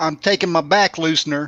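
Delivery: fake southern drawl accent. Joking about back medicine, saying the line in a put-on southern accent. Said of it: "am I about to pull out my southern accent?".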